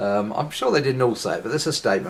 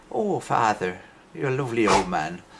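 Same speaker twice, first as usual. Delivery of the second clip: put-on Irish accent. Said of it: "I'm using an Irish accent there".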